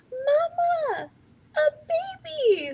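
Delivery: put-on very high, swooping toddler voice. Retelling what her baby said with a stuffed-up nose: imitating her baby daughter. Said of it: "and she goes".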